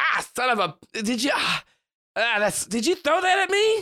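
flustered stammering outburst. Voicing a girl in a money mask who was hit: masked girl character voice. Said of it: "she turns around and goes".

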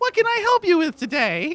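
put-on very high, eager little girl voice. A game master voicing a halfling woman selling clothes, in a little girl voice. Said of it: "you hear a little girl voice go".

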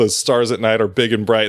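ordinary delivery

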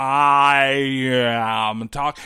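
very slow, low, each word stretched and drawn out. Explaining on a podcast how someone overdid it, the speaker demonstrates speaking really slow. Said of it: "imagine if I was going to speak really slow".

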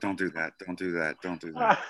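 muttering under breath. Retelling own reaction to trainers at the gym: imitating muttering under breath. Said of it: "or under my breath, I go".

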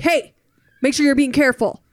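loud, mock stern dad-voice yell. Retelling how a man yelled at her while she played with kids, retelling a dad yelling. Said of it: "maybe he's just yelling in a dad voice".

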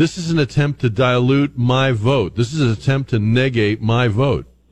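plain

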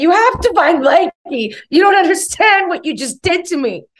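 mock sobbing, very high-pitched and loud. Speaker retells begging the cleaning staff to find her lost blanky, imitating own crying. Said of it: "crying as a grown-ass woman saying".

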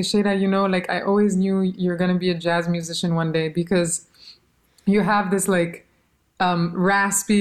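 normal talking voice

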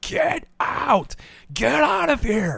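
very high, drawn-out shrieking scream. Retelling how a man could still be heard over a loud live band, imitating someone screaming. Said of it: "I could still hear him screaming".

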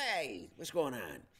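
slick, jive-talking city rabbit voice. Speaker recalls playing the city rabbit in a kids' play, jive talking rabbit voice. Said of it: "I think they call him the jive talking rabbit".

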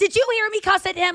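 mock high-pitched screaming woman's voice. Retelling a passenger screaming at other passengers on a plane: imitating a woman screaming. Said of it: "screams to the passengers".

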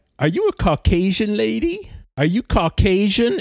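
teasing, leering tone. Retelling how a stranger leaned in to a reader: imitating a leering, joshing man. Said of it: "leering, joshing vibe".

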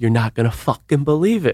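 put-on Long Island New York accent. Retelling what Jill Zarin said on seeing the speaker, Jill Zarin's Long Island accent. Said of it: "In her, like, Long Island, New York accent".

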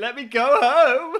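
fake sobbing. Imagining a footballer running around the pitch in tears: mock crying. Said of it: "tears streaming down his face".

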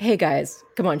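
usual speaking voice

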